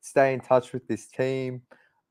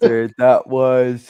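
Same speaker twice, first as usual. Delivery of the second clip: yawning while talking, louder; 10 dB louder than usual. Breaking off mid-sentence in a conversation, yawning. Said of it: "sorry, I don't know why I'm yawning".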